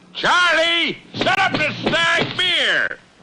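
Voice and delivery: loud shout.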